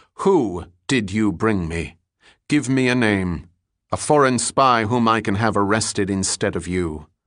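ordinary delivery

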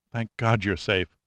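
ordinary delivery, nothing marked

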